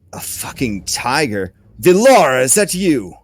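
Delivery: furious goblin-voice shout. Voicing a blinded goblin shouting at the bugbear: goblin shouting. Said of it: "it just starts shouting at him".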